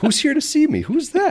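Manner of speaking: high-pitched, laughing, confused-sounding voice. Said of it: "he's like".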